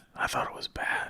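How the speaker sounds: whispering. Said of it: "I'm gonna whisper this into my mic".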